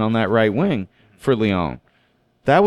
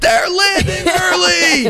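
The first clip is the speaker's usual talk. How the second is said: scream, higher in pitch; 3 dB louder than usual. Retelling how a friend came up behind, imitating someone screaming.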